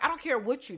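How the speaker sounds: ordinary talk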